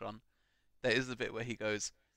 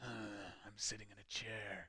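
very quiet hushed villain voice, barely above a murmur; 12 dB quieter than usual. Retelling the same scene, doing a Thanos impression. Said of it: "That was a pretty good impression".

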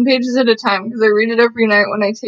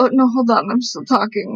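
put-on feisty, spicy old woman voice. Retelling Ayn Rand being interrupted: imitating Ayn Rand. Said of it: "then she'll be like".

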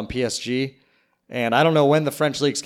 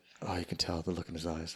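put-on golf announcer voice, lower and quieter; 7 semitones lower, 16 dB quieter than usual. Imitating a golf broadcaster's interview remark: Jim Nantz voice. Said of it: "the Jim Nantz voice".

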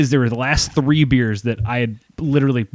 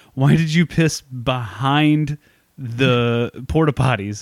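ordinary talk

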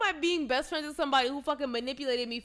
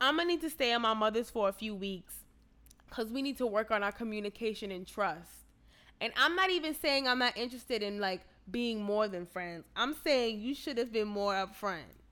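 ordinary talk

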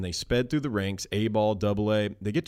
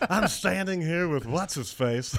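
put-on broadcaster voice, pitched higher; 8 semitones higher than usual. Showing how an interview opening sounds: Harry Carey impersonation. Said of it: "that's my impersonation of Harry".

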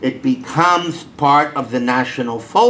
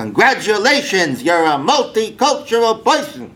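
put-on Brooklyn accent, pitched up; 7 semitones higher than usual. Retelling his reply to a student, in his best Brooklyn accent. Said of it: "I would go into my best Brooklyn accent and say".

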